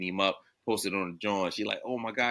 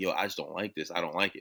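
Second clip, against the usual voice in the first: put-on sniffling, tearful voice, quieter; 4 dB quieter than usual. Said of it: "he's, like, sniffling and shit".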